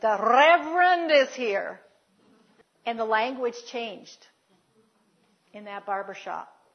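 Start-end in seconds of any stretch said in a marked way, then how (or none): 0.0-1.8 booming, very loud, slow delivery. Retelling how the barber shop owner greeted his minister father: very loud announcement. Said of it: "in a very loud voice says".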